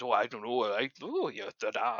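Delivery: slow, mumbled fake Welsh nonsense babble. Voicing a character who mutters while fetching food: welsh gibberish. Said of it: "he enters into Welsh gibberish and goes".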